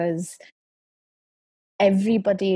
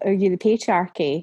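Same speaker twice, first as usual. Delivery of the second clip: ordinary talk, nothing marked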